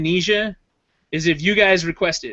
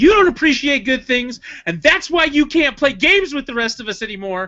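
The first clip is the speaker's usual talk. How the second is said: high, joking, scolding yell; 7 semitones higher than usual. Joking with a friend, the speaker acts out a future comeback, mock yelling. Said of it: "I'm gonna yell at you too".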